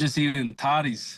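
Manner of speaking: attempted, fake put-on Scottish accent. Asked what he is doing in Scotland, answering in an attempted Scottish accent. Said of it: "trying to do the, the, the Scottish accent".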